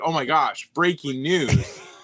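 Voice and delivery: thrilled, passionate, excited, very slow, drawn-out delivery. Showing someone how to announce breaking news with more passion; excited and passionate. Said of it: "say it with more passion. You got to be excited".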